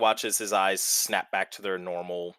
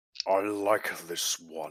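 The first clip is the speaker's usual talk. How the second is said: eerie voice echoing around the room; 2 semitones lower, 3 dB quieter than usual. A narrator voices an unseen voice that the players all hear: reverberating voice. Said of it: "It reverberates around the room".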